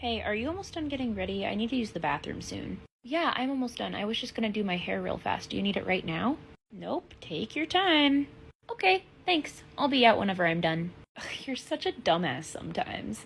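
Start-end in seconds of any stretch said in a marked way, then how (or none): 11.2-13.2 breathy, whispered, sarcastic tone. Calling the other speaker a dumbass: sarcastic tone. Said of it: "your tone is sarcastic".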